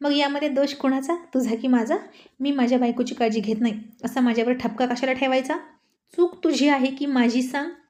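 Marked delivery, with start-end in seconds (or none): none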